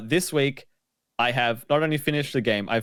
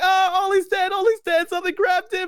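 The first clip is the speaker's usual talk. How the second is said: put-on screaming, higher in pitch; 3 dB louder than usual. Retelling seeing a teammate dragged off by a monster: retelling a scream. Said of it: "and I'm screaming".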